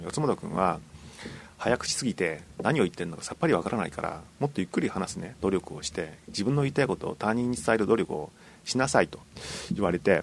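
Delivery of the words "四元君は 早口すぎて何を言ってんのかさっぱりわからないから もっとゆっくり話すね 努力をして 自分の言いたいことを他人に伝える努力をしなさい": usual speaking voice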